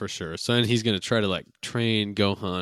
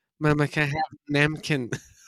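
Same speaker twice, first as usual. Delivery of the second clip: put-on high, little, babyish toddler voice; 7 semitones higher, 3 dB louder than usual. Showing how a little baby would say the word: little baby voice. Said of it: "like a little baby would say napkin".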